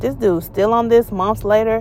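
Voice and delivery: ordinary talk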